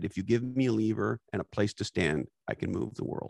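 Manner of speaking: plain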